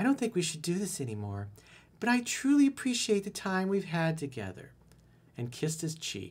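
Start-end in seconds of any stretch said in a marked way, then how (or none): 0.0-4.7 put-on high girl's voice. Retelling what a woman told him, in a girl's voice. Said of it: "let me do this in a girl's voice".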